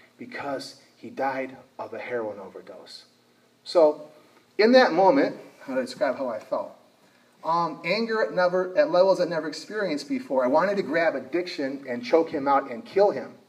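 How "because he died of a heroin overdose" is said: muttered under breath, lower and quieter. Retelling what a grieving mother said at a church ceremony: imitating saying under her breath. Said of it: "she says under her breath".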